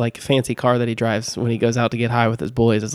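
ordinary talk, nothing marked

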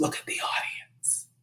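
very quiet, breathy whisper. Retelling what the artistic director said during the reading: imitating a whisper. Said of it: "He whispers".

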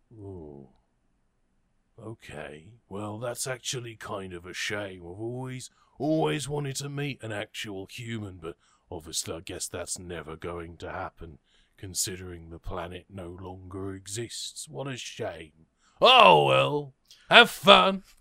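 very low, huge, large-creature voice. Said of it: "this large creature looks at you and, and he says".

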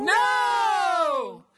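gasp, then very loud, high scream.

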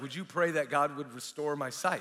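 ordinary talk, nothing marked

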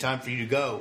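ordinary talk

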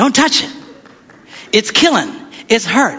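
put-on screaming child voice. Father retelling his daughter's splinter, imitating Leslie screaming. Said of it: "And she's screaming".

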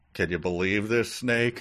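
ordinary delivery

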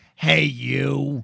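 worst imaginable rough, creaky, grating, dragged-out voice. Retelling a film scene where a character is greeted: imitating a grating voice. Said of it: "he's met with the worst voice in history".

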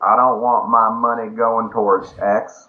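put-on slow, drawling Southern US accent. Voicing a quoted complaint about money, in a southern us accent. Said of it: "I know I used a southern accent".

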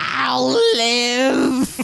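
shrill, very high alien creature shriek. Retelling a movie scene where a character shrieks an answer: shrieking E.T. voice. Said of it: "shrieks out in, like, an E T voice".

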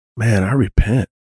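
contrite, chastened, sheepish voice, gone still. Retelling a teammate's apology after an awkward remark: imitating someone going quiet. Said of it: "he just got really quiet".

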